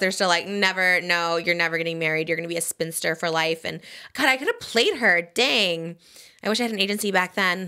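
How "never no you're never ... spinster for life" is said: plain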